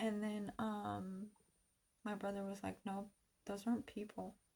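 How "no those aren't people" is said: very calm, matter-of-fact, utterly unbothered. Retelling what the brother said about the yelling: imitating a very calm voice. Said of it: "in the most calmest way possible".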